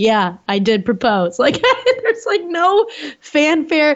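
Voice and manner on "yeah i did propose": put-on flat, deadpan delivery. Describing a man's reaction after proposing, imitating his deadpan reply. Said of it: "just pretty deadpan as he's all like".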